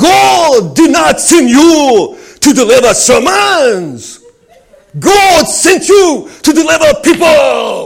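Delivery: very loud, high preaching, "God" drawn out. Doing an impression for listeners who asked to hear it: Reinhard Bonnke impression. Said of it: "my impression of Reinhard Bonnke".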